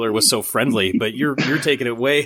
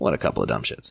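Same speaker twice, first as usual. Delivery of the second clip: very low, blunt, crude, dismissive mutter; 5 dB quieter than usual. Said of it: "gives us that colloquialism".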